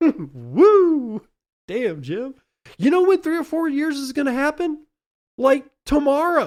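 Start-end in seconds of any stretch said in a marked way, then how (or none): 2.8-6.5 very high, school cheerleader style voice. Replaying a quoted prediction back at Jim, sounding like a cheerleader. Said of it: "you sound like a cheerleader".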